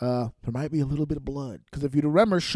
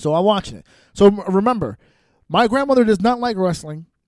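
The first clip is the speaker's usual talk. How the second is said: ordinary talk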